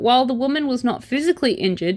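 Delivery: plain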